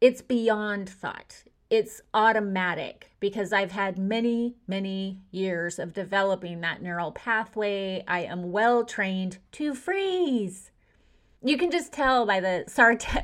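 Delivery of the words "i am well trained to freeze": heavy sarcasm, plainly displeased, swooping sing-song. Describing being trained to freeze under threat: sarcastic tone. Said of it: "by the sarcastic way that I say it".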